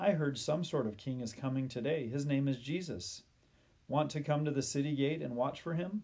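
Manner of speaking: ordinary delivery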